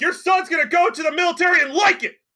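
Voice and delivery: very high, shrill hollered yell. Voicing a woman who yells after a departing nobleman: yelling woman. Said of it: "and just yell afterwards".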